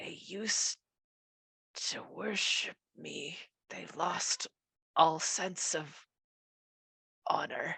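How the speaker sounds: broken, cracked, aching, halting voice that catches. Answering questions about a broken deal with the town, in a cracked, aching voice. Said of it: "This cracked, aching voice".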